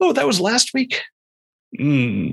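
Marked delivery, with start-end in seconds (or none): 0.0-1.0 high, startled squeak of surprise. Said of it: "where I'm like".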